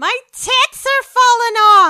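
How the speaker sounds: very high, very loud, shrill, piercing scream. Recalling an actress first seen in History of the World Part One, retelling a shrill scream. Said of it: "she just screams in this shrill voice".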